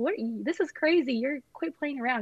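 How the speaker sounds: put-on flustered yelling, high-pitched and nervous. Retelling yelling at him while thinking his proposal was a joke: retelling one's own yell. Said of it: "I'm yelling at him".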